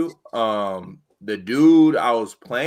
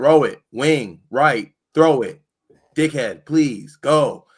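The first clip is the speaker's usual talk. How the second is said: acted-out hollering, all shout; 3 semitones higher, 4 dB louder than usual. Retelling urging a teammate to pass during a game: imitating himself yelling. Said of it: "I'm yelling".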